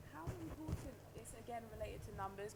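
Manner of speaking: very soft, distant, too quiet to hear.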